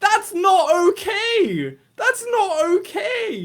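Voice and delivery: high, loud, slow outraged cry.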